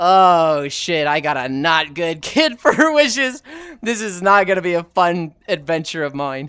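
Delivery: put-on slow, drawn-out, weary disappointed sigh. Retelling a genie sketch as the genie, imitating a sighing genie. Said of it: "just the sigh of".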